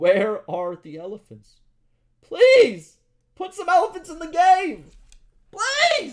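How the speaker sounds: very loud, over-emotional, swooping, overwrought delivery. Reading developer notes aloud and reacting to the developers: getting too emotional. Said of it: "I'm getting too emotional".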